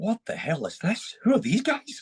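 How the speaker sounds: put-on high, slow, awestruck child voice full of wonder.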